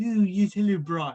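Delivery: put-on, animated sitcom cartoon voice. Showing an impression said to be done well: Stewie Griffin voice. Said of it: "I'm very good at Stewie Griffin".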